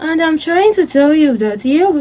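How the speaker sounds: slow, drawn-out lecturer voice. Imitating a lecturer teaching a class: imitating a very slow lecturer. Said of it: "very slow, like this".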